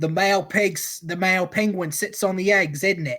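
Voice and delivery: thick Cockney accent, laid on heavily. Joking about a nature documentary narrator: Attenborough with thick Cockney accent. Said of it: "thick Cockney accent".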